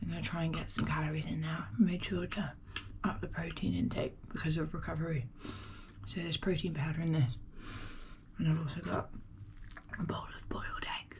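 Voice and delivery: very quiet, low, hushed whisper. At six in the morning, with someone still asleep, the speaker is whispering. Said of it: "The reason I'm whispering".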